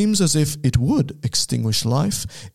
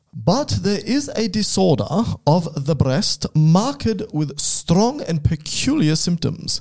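fake British accent in a reading voice; 4 semitones higher than usual. Reading aloud an 1802 text by a British author, put-on British accent. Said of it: "so I'll do a British accent".

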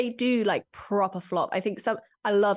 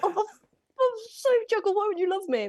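very high, slow pet-talk voice; 12 semitones higher than usual. Speaker demonstrating how they talk to their pet, in a voice for talking to a cat. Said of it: "give us a little blast of how you talk to Jekyll".

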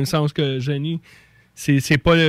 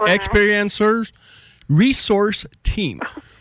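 pitched-up anglophone accent, English-speaker pronunciation; 5 semitones higher than usual. Saying what an acronym stands for after being asked to: anglophone accent. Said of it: "avec un accent anglophone".

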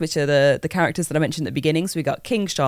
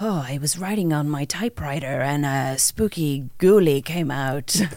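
brooding, haunted writer-narrator voice. Recommending the Alan Wake game's torch, the speaker does the Alan Wake voice. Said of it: "the proper Alan Wake voice coming in there".

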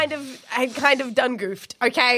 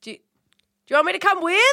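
yelling out loudly, much higher pitch; 6 semitones higher than usual. A player calls to a character walking away, yelling out. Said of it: "I'm going to yell out".

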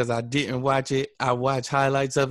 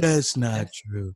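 put-on older politician voice, pitched lower; 3 semitones lower than usual. Retelling a debate reply, doing a Biden impression. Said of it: "that's a good impression".

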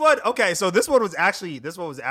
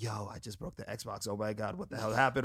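mock-panicked, quieter and slower; 8 semitones lower, 12 dB quieter than usual. Retelling finding water spilled on the xbox, retelling own panic. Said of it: "And I'm panicking".

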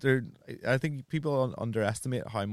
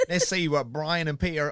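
weird, put-on Cockney accent, high and loud; 5 semitones higher, 5 dB louder than usual. Introducing the next show on BBC Three in a weird Cockney accent. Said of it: "Was that your Cockney accent?".

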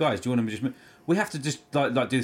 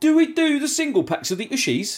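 acted, loud, raised, carrying voice; 6 dB louder than usual. Retelling a man's question to the speaker, said quite loudly. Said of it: "he just says it quite loudly".

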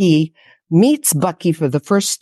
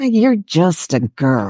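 slow, smug, self-satisfied, dismissive voice. A narrator reads someone taunting the narrator, smug. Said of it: "voice turned smug".

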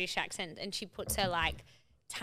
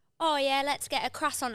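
put-on British accent, pitched up; 6 semitones higher, 5 dB louder than usual. Admitting a habit to the others, the speaker quotes herself in a put-on british accent. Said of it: "I can't stop doing the British accent".

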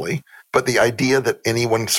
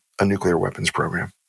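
flat deadpan delivery, much lower; 3 semitones lower than usual. Retelling their own answer to an interviewer, giving a deadpan reply. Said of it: "And I deadpanned that I'm like".

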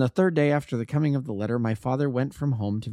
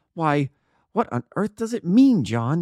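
stammering, higher and louder; 4 semitones higher, 5 dB louder than usual. Narrator reads a man questioning John about an envelope, stammering. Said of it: "he stammered".

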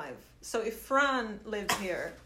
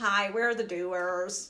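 put-on American accent. Joking about doing the whole episode in an American accent: put-on American accent. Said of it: "We have to do it in American accent".

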